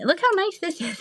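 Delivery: put-on very high-pitched elderly woman voice. Showing off a new wallet, speaking in an old lady voice. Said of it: "Michaela likes my old lady voice".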